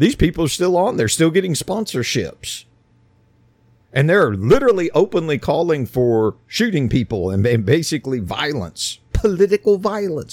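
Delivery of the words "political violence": high, mocking scare-quote tone. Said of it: "quote unquote".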